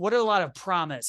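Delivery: normal talking voice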